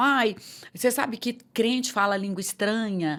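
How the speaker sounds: ordinary delivery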